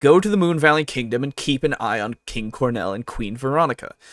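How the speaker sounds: plain reading voice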